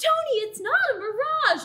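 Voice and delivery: shrill, very high-pitched, drawn-out screaming. Voicing a stopped person warning the others in the game: screaming. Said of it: "one of the people who you had just stopped screams".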